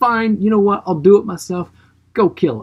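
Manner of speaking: put-on impatient royal outburst. Retelling the king's reaction after messengers fail: imitating an angry king. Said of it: "He comes in all angry and pissed off".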